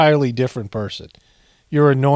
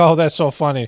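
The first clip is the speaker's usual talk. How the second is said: put-on mock laughter; 3 semitones higher than usual. Acting out how a man reacts when told his ratings are abysmal, imitating his laughing reaction. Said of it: "he laughs like".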